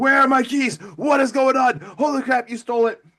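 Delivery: acted, high-pitched, wild, crazed screaming. Retelling a movie scene where the doll keeper screams at someone: imitating someone screaming. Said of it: "The doll keeper is screaming at him".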